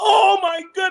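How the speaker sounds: shrill, very high-pitched, startled outcry. Retelling a mother's reaction at breakfast: imitating someone shouting. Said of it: "she shouted".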